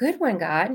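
sweet, innocent, guileless voice. Retelling what he said while watching the sunrise: imitating an innocent, sweet voice. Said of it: "with a really innocent, sweet voice said".

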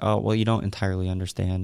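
ordinary talk

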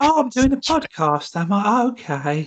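put-on old lady voice, way up high. Pretending to be lost mid-podcast: put-on old lady voice. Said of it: "You turned into an old lady".

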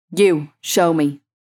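sharply barked. Narrating a story, the man at the front of the line barks an order. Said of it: "barked the man".

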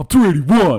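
play-acted touchy, defensive tone, loud. Retelling a man's reply when teased about his weight, mock-defensive reply. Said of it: "Like all defensive".

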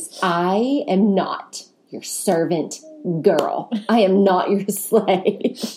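mock unkind, not-nice scolding tone. A mother recounts what she told her three kids: retelling a not-nice tone. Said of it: "in a not very nice tone of voice".

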